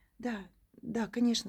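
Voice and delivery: embarrassed, fumbling mumble, a bit loud. A woman passenger answers the taxi driver's remark with an embarrassed mutter. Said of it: "смущенно пробормотала она".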